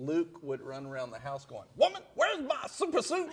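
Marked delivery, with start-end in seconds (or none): 1.8-3.3 shrill, raised, high and loud yell. Retelling how Luke ran around the house quoting the movie: Samuel L. Jackson impression. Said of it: "In his best Sam-, Samuel Jackson".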